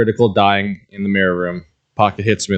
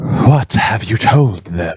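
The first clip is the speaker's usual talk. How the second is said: hushed, whispery voice; 3 dB louder than usual. Speaking from inside the wall behind a listener, in Tassar's whispery voice. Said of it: "he just hears Tassar's whispery voice".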